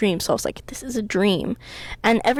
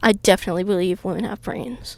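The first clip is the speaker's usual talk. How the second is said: ordinary delivery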